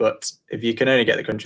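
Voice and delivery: plain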